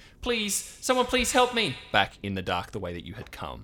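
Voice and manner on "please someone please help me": woman's shrill, very high, loud screaming cry. Narrating the scene, the speaker voices a woman back in the dark: screaming woman's voice. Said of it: "You hear a scream that is a woman's voice".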